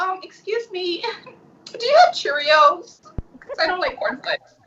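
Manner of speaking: theatrically over-dramatic, high-pitched voice. Retelling being fed in a jail cell by the guard: imitating own dramatic manner. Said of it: "with my dramatic self, I was like".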